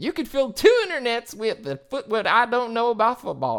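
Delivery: loud, high sing-song delivery with swinging pitch. Quoting a line they always say: Ted Lasso voice. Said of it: "my best Ted Lasso impersonation".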